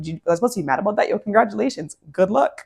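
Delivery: words bubbling with laughter, laughing throughout. Acting out a reply to someone who wanted to hurt you: mock laughing while talking. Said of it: "This laugh is gonna come from this person's soul".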